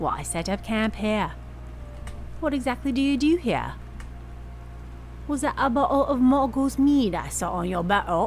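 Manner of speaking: high, put-on upper-crust posh accent. Reading a script's lines aloud, trying each one in an accent: put-on accent. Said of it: "I'm going to read each of these lines with an accent".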